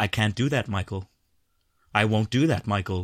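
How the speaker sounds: creepy, low, cold, detached computer voice. Discussing the ai voice trope in a show, demonstrating a cold, detached ai voice. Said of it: "the cold, detached AI voice".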